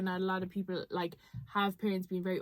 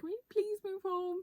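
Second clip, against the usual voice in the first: put-on weepy, tearful crying, pitched way up; 12 semitones higher, 3 dB quieter than usual. Retelling begging to move back home: imitating own past crying. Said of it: "literally crying, being like".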